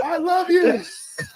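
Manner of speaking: piercing, very high-pitched, very loud yelling holler. Retelling a friend yelling out a car window: imitating Patrick yelling. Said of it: "he yells out the window".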